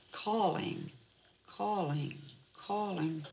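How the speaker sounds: low, soft, eerie ghostly voice. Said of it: "Eerie voices".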